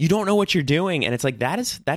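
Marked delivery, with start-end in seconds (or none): 0.0-1.0 acted, pitched-up, screamed-out cry. Retelling a character tied up and taken away after a fight, retelling a scream. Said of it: "he's like screaming".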